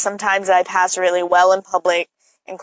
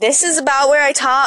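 normal speaking voice lifted to a higher pitch; 7 semitones higher than usual. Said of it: "let's see if I can".

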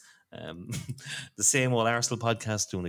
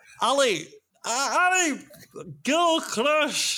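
attempted Scottish accent, much higher pitch; 5 dB louder than usual. Taking a turn when asked for an accent, giving a dramatic line in it. attempted scottish accent. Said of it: "do the brave to try and pick up on the accent".

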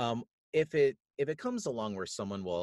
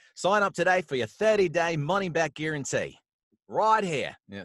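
Australian accent, higher and louder; 8 semitones higher, 8 dB louder than usual. Asked by the host to share an australian accent, a guest does an australian accent. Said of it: "Do you care to share your Australian accent?".

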